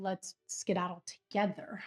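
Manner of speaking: ordinary talk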